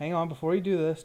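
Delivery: ordinary delivery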